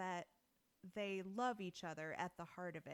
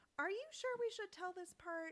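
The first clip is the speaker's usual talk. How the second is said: acted worried, fretful crow narrator voice, higher; 11 semitones higher than usual. Acting out a crow narrator who doubts the story is fit for children: imitating a worried crow narrator. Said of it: "another of them is like".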